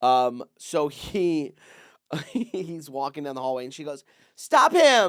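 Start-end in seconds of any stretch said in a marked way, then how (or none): 4.4-5.1 very loud, very high, shrill dramatic cry. Telling a story about a teacher in the hallway, imitating her dramatic outburst. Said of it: "it got dramatic".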